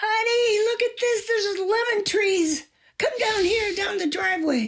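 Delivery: thrilled high scream.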